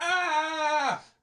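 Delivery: high, soft, short mock American scream.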